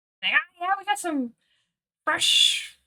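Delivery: very high-pitched, loud goblin voice. Voicing the goblin answering a character's greeting, in a Not Nez goblin voice. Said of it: "And not Nez will".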